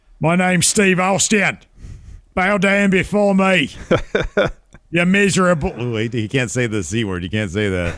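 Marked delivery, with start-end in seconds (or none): 0.2-5.7 put-on very high, shrill English accent, king voice. Joking about a wrestler becoming king: Steve Austin with English accent. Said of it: "he'd have to start speaking with the English accent".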